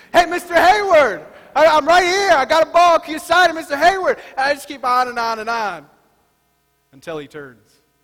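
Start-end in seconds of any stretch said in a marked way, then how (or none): 0.2-4.2 insistent, loud, high-pitched yelling. A pastor re-enacts calling out for an autograph at batting practice, retelling own loud yelling. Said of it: "I can be loud".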